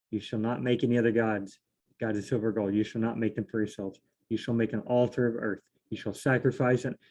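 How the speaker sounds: plain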